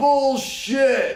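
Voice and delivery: mock, very high, shrill shouted yell. Telling a story about diners doubting who cooked their dinners, retelling someone's yell. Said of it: "somebody yelled".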